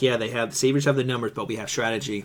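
ordinary delivery

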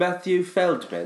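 clumsy, bad fake English accent, very high. Naming the elusive feldman to podcast co-hosts, bad put-on english accent. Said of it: "Is that English?".

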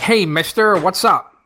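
Western cowboy voice, howdy-partner style. Showing how you'd greet someone instead of saying 'yo', in a cowboy voice. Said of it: "That's my best howdy, partner. Voice".

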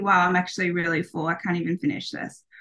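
normal talking voice

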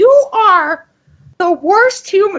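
very high, bad put-on cartoon mom voice. Stop the conversation because you have to do your voice: a bad Marge Simpson impression. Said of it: "I have to do my Marge Simpson impression".

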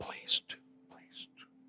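very hushed, faint, breathy, barely-there whisper. Retelling a dying man's answer to an offer of prayer: imitating a whisper. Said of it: "he could only whisper".

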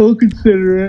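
words spoken mid-yawn, slightly high. Agreeing to consider a trip next year, talking through a yawn. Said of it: "That was me talking during a yawn".

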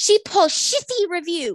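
high, screaming, accusing tone. Retelling how a man at the salon started screaming about her review; retelling a man screaming. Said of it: "he starts screaming".

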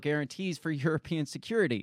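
ordinary talk

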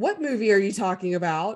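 play-acted startled, nearly terrified tone. Retelling a guy who suddenly asks what movie: imitating an almost terrified guy. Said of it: "just almost terrified".

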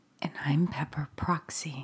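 low, hushed, put-on sultry voice. Co-host introducing themself at the start of the show, sultry Halloween voice. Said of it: "sultry, sultry Proxy".

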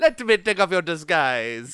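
high-pitched, silly, put-on Italian accent. Retelling a trailer moment: imitating Russell Crowe's Italian voice. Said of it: "He's, like, Italian".

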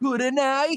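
very high anime-dub voice. Repeating an imitated anime line on request: imitating an anime character's line. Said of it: "Come on, do it again".

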